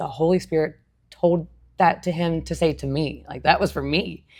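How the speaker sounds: play-acted choked-up voice, crying and sobbing through words. Retelling own reaction after the pastor's message: retelling own words while sobbing. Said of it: "I am sobbing".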